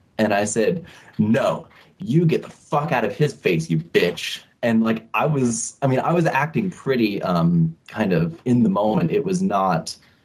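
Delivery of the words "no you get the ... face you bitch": mock livid, furious, raised voice. Retelling telling off a woman who was grabbing a kid, retelling a raised voice. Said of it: "I raised my voice at her".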